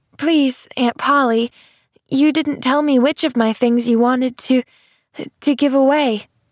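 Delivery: small, unsteady, wavering voice. Narrator reads Pollyanna calling after Aunt Polly on the stairs, small unsteady voice. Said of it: "a small, unsteady voice called after her".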